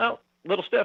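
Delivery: play-acted deadpan, wickedly dry sarcasm, slightly high. Retelling a man's reply when asked about his arm: retelling dry sarcasm. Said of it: "it was that wickedly dry, sarcastic".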